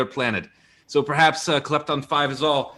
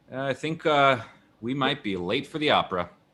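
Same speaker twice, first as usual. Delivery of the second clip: bone-dry, underplayed comic delivery; 4 dB quieter than usual. Acting a flat-tire scene as dry humor with a scene partner, deadpan dry humor. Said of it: "deadpan dry humor".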